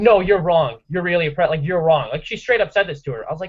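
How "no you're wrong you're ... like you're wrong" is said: normal talking voice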